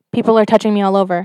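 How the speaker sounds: plain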